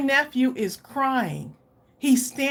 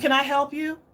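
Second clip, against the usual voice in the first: mock snippy, rude tone. Retelling what the daycare worker said when interrupted: imitating a snippy attitude. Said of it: "With an attitude".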